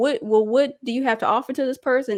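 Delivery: normal talking voice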